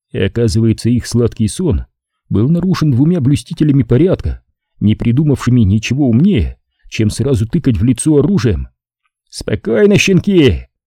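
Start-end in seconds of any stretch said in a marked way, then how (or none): 9.3-10.6 high, sharp, barking voice. Narrator reads a policeman waking people in sleeping bags at gunpoint, barked command. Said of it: "рявкнул один из них".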